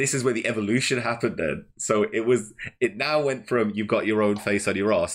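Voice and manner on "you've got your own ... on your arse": ordinary talk, nothing marked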